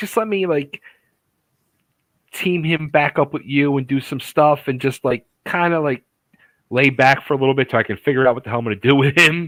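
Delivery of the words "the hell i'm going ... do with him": ordinary talk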